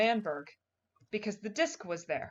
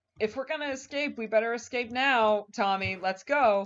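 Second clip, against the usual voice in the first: plain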